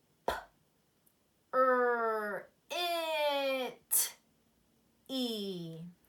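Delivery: each sound of "it" pulled out very slowly. Showing learners how to sound out a word: stretching out the word. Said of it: "Let's stretch it on our arm one more time".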